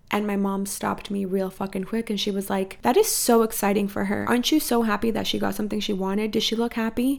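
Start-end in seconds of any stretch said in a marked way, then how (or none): none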